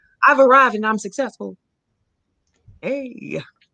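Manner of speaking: mocking, heavily sarcastic declaring tone. In conversation, voicing a mindset he mocks, saying it sarcastically. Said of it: "I'm saying it so sarcastically".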